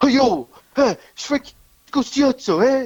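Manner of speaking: put-on Italian accent. Retelling a phone call on request, imitating a fake Italian guy. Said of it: "do it in his voice".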